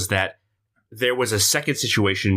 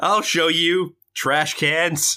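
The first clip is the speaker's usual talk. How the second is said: put-on drunk voice, higher and slower; 7 semitones higher than usual. Retelling a story of drunk characters leaving, acting out The Shoveler's drunk declaration. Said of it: "The Shoveler is hammered, he declares".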